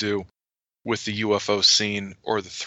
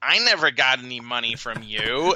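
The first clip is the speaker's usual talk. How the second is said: put-on impression voice, pitch never rising. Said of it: "where Bender says".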